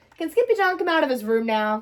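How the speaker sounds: plain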